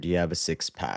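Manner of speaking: ordinary talk, nothing marked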